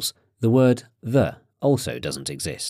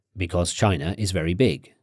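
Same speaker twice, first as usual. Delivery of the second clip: ordinary talk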